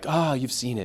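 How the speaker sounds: knowing, motherly voice, giggling through the words. Retelling how Lena answered the vision: imitating Lena's all-knowing motherly giggle.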